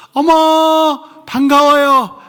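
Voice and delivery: very high sol-pitch, loud voice. Leading a church greeting exercise, the speaker raises the voice to sol: raised to sol pitch. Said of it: "조금 목소리를 솔 톤으로 올리셔야 돼요".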